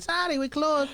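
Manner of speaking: put-on Chinese accent, male voice. Retelling workers at Burger refusing service at closing, in a mock Chinese accent. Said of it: "why I'm sounding like a Chinese man".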